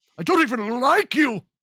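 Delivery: high, loud outburst. Doing an impression of John Lithgow yelling from a film. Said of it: "that's my best Lithgow impression".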